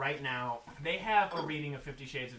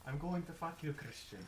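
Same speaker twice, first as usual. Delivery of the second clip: bad put-on Irish accent, soft and barely there; 8 dB quieter than usual. Retelling what a man said on stage in his Irish accent: put-on Irish accent. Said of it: "talking in his Irish accent".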